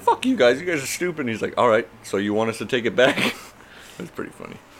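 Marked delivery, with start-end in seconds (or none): 0.0-1.2 put-on yelled outburst, angry and pitched up. Retelling how a man yelled at them over a damaged delivery, retelling a yell. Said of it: "And then he's like yelling".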